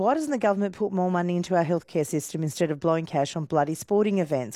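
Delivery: ordinary delivery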